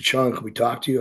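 ordinary talk

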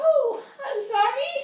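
very high, little elf voice.

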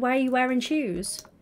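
normal talking voice

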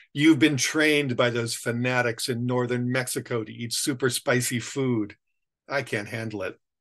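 plain reading voice

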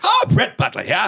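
vintage radio broadcast voice. Speaker showing a character he does, speaking as him: Brett Butler 1920s radio voice. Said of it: "1920s radio voice".

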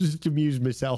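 talking through giggles. Talking on after apologizing for giggling: giggling while talking. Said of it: "I'm giggling like a toddler".

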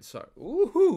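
voice cracking. Talking about a stock they like, cheering with a voice crack. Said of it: "Ooh, voice crack".

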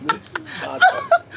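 high-pitched, slow, laughing complaining tone.

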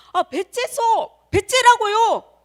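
high, loud, slow yelling.

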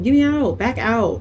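panicked call, yelled high and loud.

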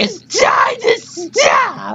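exaggerated, over-the-top, very slow, very high drawn-out shout. Showing how the line should sound after calling a take underwhelming: over-the-top impression. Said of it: "It's supposed to be like".

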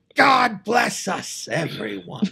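high, creaky, drawn-out voice. Voicing Tiny Tim as a penguin, in a Gilbert Gottfried voice. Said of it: "I don't know why he sounds like Gilbert Godfrey".

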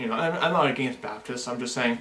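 ordinary delivery

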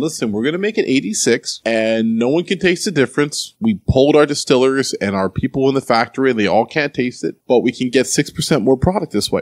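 plain

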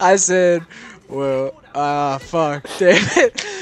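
words pushed through laughter, very loud, very slow. Trying to repeat a joke for the others: laughing while talking. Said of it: "I'm laughing too hard".

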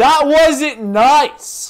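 very slow, drawn-out, swooping yell. Scolding the baby in the game at bedtime: yelling. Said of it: "I'm yelling a lot in this episode".

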